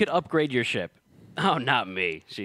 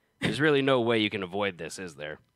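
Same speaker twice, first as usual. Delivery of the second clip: plain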